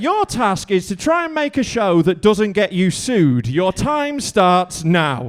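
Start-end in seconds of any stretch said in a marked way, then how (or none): none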